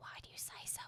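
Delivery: whispered under the breath. Retelling own question to a child in a theater, under the breath. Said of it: "under my breath".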